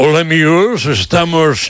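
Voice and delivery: put-on, affected, placed broadcaster announcer voice. Criticizing how some announcers place their voice, imitating them: affected announcer voice. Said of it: "cómo coloca la voz".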